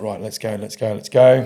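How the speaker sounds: ordinary delivery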